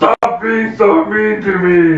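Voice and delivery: high-pitched, weepy, tearful crying voice. A player's character, on their turn in the game, speaks to the others: crying. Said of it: "because I'm crying".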